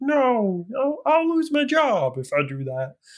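slow, swooping, drawn-out puppet voice. Retell a scene where she asks to drive the boat; he answers in a Kermit the Frog voice. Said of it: "I just imagine with Kermit the Frog kind of voice".

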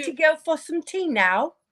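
put-on British accent. Teasing someone about their accent, speaking in a British accent. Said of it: "I would love to hear your British accent".

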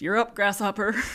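put-on American Southern accent. Retelling a shift, the speaker quotes the charge nurse calling on them: imitating a southern accent. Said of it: "he had this great Southern accent".

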